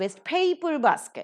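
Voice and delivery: paper in waste paper basket gets the main stress. Explaining stress in a three-word compound word, stress on paper. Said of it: "Paper is given the stress".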